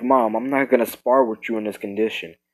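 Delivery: ordinary delivery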